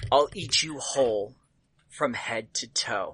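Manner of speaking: sibilant, close-up, menacing spider-like hiss. Narrator voices a spider gripping the listener and hissing in their ear. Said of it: "he hisses in your ear".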